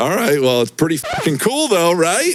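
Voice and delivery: put-on eager fifteen-year-old voice, high and swooping. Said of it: "that's my fifteen-year-old voice".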